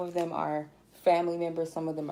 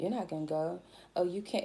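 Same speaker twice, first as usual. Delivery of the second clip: quieter, mock-serious tone; 5 dB quieter than usual. Retelling a person who spoke against her going, imitating her serious warning. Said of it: "but she was serious".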